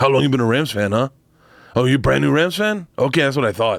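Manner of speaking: put-on accidental, slipped-in Mexican accent. Quoting a guy in Raiders gear talking to fans at a game, in a Mexican accent. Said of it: "You just did him in a Mexican accent".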